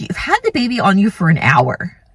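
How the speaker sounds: put-on snarky remark with swooping sing-song pitch. Retelling what a staff member said to her after the birth: imitating a snarky nurse. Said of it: "She kinda says to me really snarky like this".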